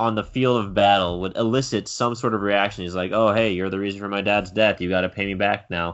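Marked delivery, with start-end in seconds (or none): 3.1-5.9 mock-sarcastic, almost sarcastic tone. Discussing a character's reaction, retelling his line almost sarcastically. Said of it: "Almost sarcastically".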